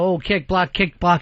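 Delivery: normal talking voice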